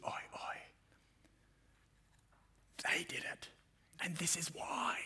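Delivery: very soft, hushed, breathy whisper. Retelling how his wife leaned over in the movie: imitating his wife whispering. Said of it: "she leans over and whispers".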